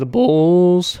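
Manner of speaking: voice cracking up high. Discussing the Bucks' defensive matchups, naming the Bulls: voice crack. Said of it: "nice voice crack".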